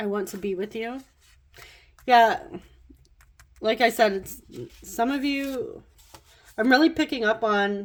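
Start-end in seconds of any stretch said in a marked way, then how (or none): none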